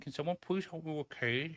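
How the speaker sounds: timid, gutless, meek, soft and high. Scolding a teammate for lacking gusto, mocking a timid plea. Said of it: "more fucking gusto in your voice".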